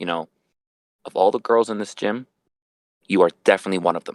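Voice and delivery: utterly serious deadpan, no hint of joking. Speaker retelling what he said to a woman at the gym, retelling a dead serious line. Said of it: "in a dead serious voice".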